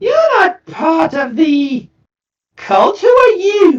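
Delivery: small, fairly high gnome voice. Game narrator voices a chained gnome questioning the players who enter: fairly high gnome voice. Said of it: "In a fairly high voice".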